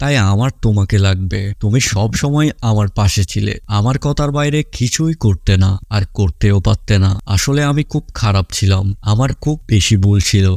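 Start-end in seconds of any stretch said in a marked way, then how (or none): none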